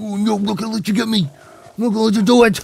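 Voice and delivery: upset pig voice. Voicing a fleeing game pig: voicing an upset pig. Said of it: "upset. He's like".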